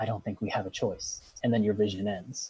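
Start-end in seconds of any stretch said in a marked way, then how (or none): 0.0-1.2 hushed, soft whisper. In a vision, one figure whispers back to Ruin; whispering. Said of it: "she whispers back to Ruin".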